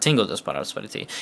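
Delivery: ordinary delivery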